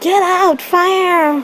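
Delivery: shrill high yelling.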